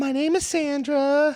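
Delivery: very high, slow, drawn-out voice. Doing an impression of a girlfriend when asked: imitating his girlfriend Sandra. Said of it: "your fucking impression of your girl".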